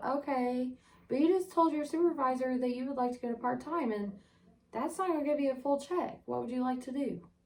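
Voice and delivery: mock syrupy, polite, soft, sweet phone voice. Retelling how she got back on the phone, imitating her own sweet tone. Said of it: "I get back on the phone all sweet".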